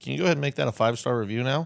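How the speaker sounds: ordinary talk, nothing marked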